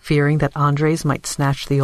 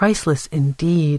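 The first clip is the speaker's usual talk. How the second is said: ordinary delivery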